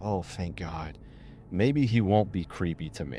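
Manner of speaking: ordinary delivery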